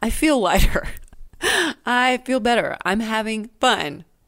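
slow voice, talking through a smile. Working through an idea aloud and feeling it lift: smiling while talking. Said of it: "Do you hear it in my voice? I'm smiling".

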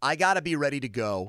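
ordinary talk

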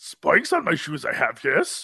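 soft, small, wise little alien creature voice. Joking with a co-host about being goth, speaking in a Yoda voice. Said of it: "Yoda's voice".

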